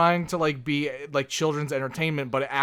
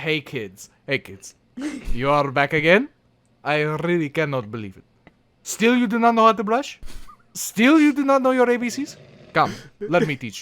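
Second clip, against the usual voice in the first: loud, swooping fake Russian accent, show host style; 3 semitones higher, 5 dB louder than usual. Showing others a voice you do, speak to kids in a put-on accent turning Russian. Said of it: "it turns Russian for me".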